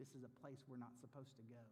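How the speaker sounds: ordinary talk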